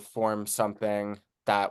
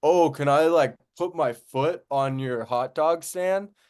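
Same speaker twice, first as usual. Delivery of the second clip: put-on play-acted loose, drunk party-guy voice, pitched high; 6 semitones higher, 4 dB louder than usual. Retelling what a drunk guy asked a hot dog seller: imitating a drunk guy. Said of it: "this drunk guy comes out of the club".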